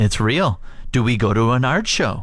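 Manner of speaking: ordinary talk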